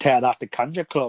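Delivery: rough, badly done, put-on Scottish accent. Retelling a scene, quoting a character's line in a horrible scottish accent. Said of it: "He says it in like a Scottish accent".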